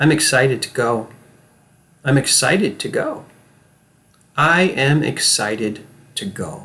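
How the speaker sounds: unconvincing, unbelievable acted delivery. Showing listeners unconvincing delivery while they repeat after the speaker, unconvincing acting. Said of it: "Not very convincing acting".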